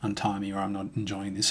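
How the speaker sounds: normal talking voice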